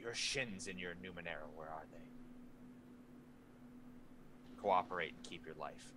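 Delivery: rough, hushed, gruff whisper. Retelling how a faceless man leaned in at his ear, gruff whisper. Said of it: "a gruff voice um, ... he whispers".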